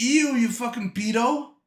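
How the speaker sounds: play-acted grossed-out, repulsed, drawn-out jeer. Acting out an imagined reply to the teacher: imitating own imagined reply. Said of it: "And I'd say".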